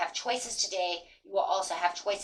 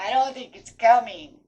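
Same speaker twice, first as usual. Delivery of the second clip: loud, tearful mock weeping through the words; 3 semitones higher, 7 dB louder than usual. Retelling own words on hard days, imitating crying. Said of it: "some days I'm crying, going".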